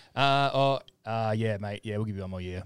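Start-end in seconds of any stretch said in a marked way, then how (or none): none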